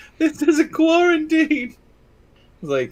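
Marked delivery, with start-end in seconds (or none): 0.2-1.7 very high-pitched yelling. Retelling a video where someone yelled at people: imitating someone yelling. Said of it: "he was yelling at the people".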